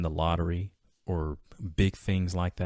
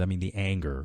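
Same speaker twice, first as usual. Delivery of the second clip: usual speaking voice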